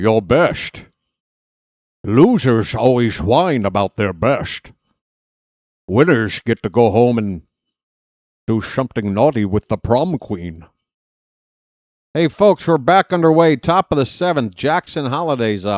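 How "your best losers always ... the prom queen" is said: lower-pitched put-on Scottish actor voice. Sliding into a movie quote during a game broadcast: Sean Connery voice. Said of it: "I'm turning into Sean Connery".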